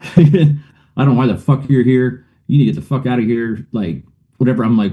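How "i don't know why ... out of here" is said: imitated screaming. Retelling a confrontation, imitating a husband screaming: retelling a scream. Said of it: "they're screaming at me".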